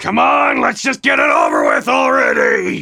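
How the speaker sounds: very loud, high-pitched, ragged, rough holler. Voicing a character at a gathering who shouts impatiently: very loud shout. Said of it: "followed by one very loud".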